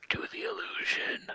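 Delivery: very soft, breathy whisper. A player speaks in character to a companion during a game, whispering. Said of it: "I just whisper to him".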